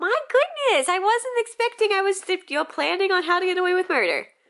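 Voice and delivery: mock outraged surprise, high, loud and squealed.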